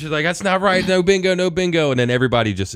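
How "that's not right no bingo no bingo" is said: mock, very high-pitched yelling woman voice. Retelling a lady at bingo who checked the card: imitating a lady yelling. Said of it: "and starts yelling and screaming".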